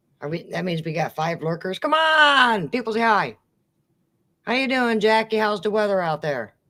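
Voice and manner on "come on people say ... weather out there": calling out, mildly yelled. A livestream host greeting a viewer named Jackie, yelling. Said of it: "Why am I yelling?".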